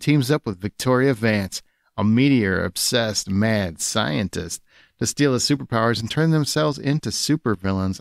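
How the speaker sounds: seductive, steamy reading style. Reading a story synopsis aloud, like nineties erotic fiction. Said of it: "reading this like nineties erotic fiction".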